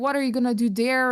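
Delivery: ordinary delivery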